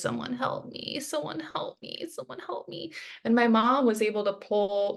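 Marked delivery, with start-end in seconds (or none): 0.0-2.9 tearful, crying whisper. Retelling being in hospital pain in bed: imitating own crying plea. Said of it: "crying, crying, saying, you know, in my voice".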